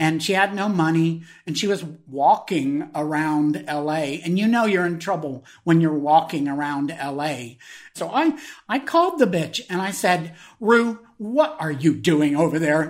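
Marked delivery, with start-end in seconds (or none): 10.6-12.9 stern, strict scolding voice. Retelling own words on a phone call: retelling own words as a stern mother. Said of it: "like a stern mother".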